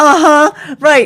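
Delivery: high, loud, cynical uh-huh.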